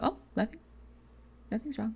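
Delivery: mock whispered, sulky, pointedly upset tone. Acting out someone who insists nothing is wrong: imitating someone pointedly upset. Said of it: "trying very, very hard to indicate to you that they're upset".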